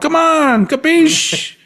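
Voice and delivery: put-on mixed Spanish and Italian accent. Complaining about missing eighties Spanish music, in a put-on Spanish-Italian accent. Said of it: "why do I have an accent now?".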